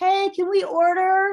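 high, loud, slow, drawn-out yelling. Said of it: "they probably would yell out to me".

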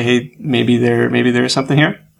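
normal talking voice

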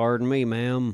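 put-on country cowboy accent. Trying a country accent for a joke: put-on country accent. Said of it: "We should all get country accents".

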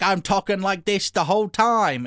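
put-on Australian drifting into Cockney. Speaker mocking a movie's accents, bad Australian accent. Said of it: "That's like more Cockney".

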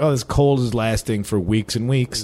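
plain

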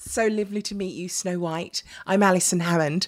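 really posh, exaggerated put-on accent. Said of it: "I put my posh accent on".

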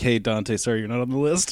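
ordinary talk, nothing marked

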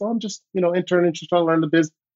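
very soft, gentle, hushed voice, quick pace. Meeting Troy unexpectedly one summer, quoting his reply in Troy Polamalu's very soft voice. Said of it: "in his very soft voice".

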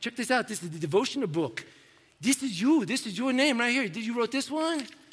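terrible, horrible, put-on Russian accent. Retelling how a man showed the speaker a devotional book, in a horrible Russian accent. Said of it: "this accent is horrible".

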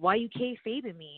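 put-on aggressive voice. Retelling how a wrestling school classmate confronted her: imitating Bo Cooper, aggressive. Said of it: "all aggressive about it".

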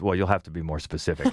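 put-on quick, dry, flat, expressionless deadpan. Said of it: "Jacob just deadpans".

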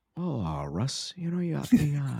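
put-on softened radio-host voice. Retelling how Bundy's voice suddenly changed when talking to Russ, imitating Bundy's soft voice. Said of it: "it's like listening to Delilah all of a sudden".

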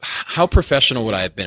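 ordinary delivery

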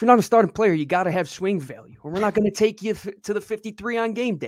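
put-on South Jersey accent, laid on. Repeating how he delivered it today, in Jeff Stoutland's South Jersey accent. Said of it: "how he said it in a South Jersey accent".

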